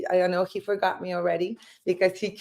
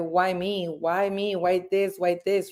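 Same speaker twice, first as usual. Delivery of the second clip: usual speaking voice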